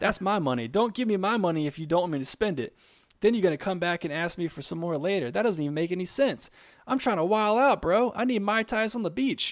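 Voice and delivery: put-on earnest rant. Retelling someone's rant about taxes on his pay: imitating a serious, sincere rant. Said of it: "he was so serious and sincere in his, uh, in his, in his rant".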